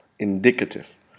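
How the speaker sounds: indicative with accent on second syllable dic. Vocabulary lesson on indicate and its forms: stress on second syllable of indicative. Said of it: "Now we place the accent on the second syllable".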